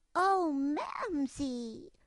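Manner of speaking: high, loud squeal of delight. Reading a story aloud, voicing the character's cry to her mother as a delighted squeal. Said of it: "she squealed with delight".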